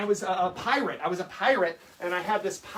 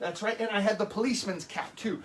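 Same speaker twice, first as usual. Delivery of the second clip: normal talking voice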